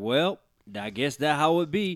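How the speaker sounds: put-on southern gentleman accent. Retelling how everyone reacted after they lost, Southern gentleman accent. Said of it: "Everyone sounded like a Southern gentleman".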